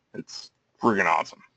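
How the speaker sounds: dry, sarcastic tone. Complaining about waiting months for a late order: sarcastic. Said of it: "Can you tell my sarcasm".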